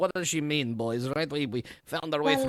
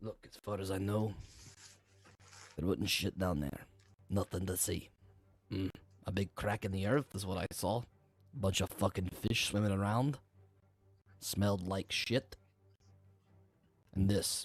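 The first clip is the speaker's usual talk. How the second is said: icy, cold, low, quiet voice; 4 semitones lower, 5 dB quieter than usual. Voicing a man answering the group after a persuasion roll: lowered voice. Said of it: "looks at you all very coldly and sort of lowers his voice".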